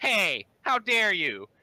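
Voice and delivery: tiny, very high, loud goblin voice. A game master voices a goblin calling out from a nearby bush: small goblin voice. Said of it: "You hear another small voice".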